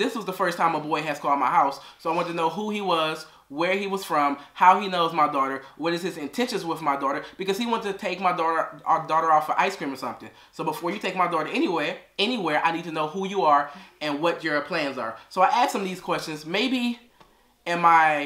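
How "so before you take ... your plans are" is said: normal talking voice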